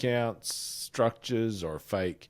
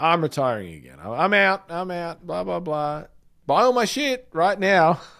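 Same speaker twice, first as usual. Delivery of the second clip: sneering, mocking salesman voice, pitched higher; 6 semitones higher, 3 dB louder than usual. Imitating online gurus announcing a retirement sale: mocking a guru's retirement sale. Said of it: "A year later".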